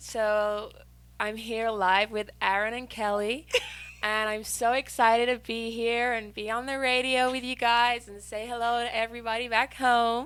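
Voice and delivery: put-on American accent. Trying the accent live on the radio after being asked: american accent. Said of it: "you do a, a good American accent".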